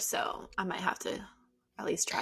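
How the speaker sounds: soft, unvoiced whisper, said as an aside.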